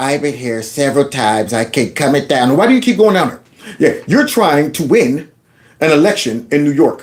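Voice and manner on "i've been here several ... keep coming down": mocking nasal voice, much lower. Mocking a candidate who keeps coming down there, in a mocking nasal voice. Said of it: "with that nasal voice".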